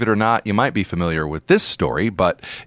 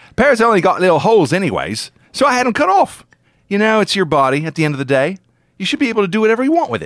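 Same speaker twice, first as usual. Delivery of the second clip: put-on Bristol accent, pitched up; 9 semitones higher, 3 dB louder than usual. Quoting a man from Bristol, UK, to the others, in an attempted Bristol accent. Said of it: "I'm going to try to do this in a Bristol accent".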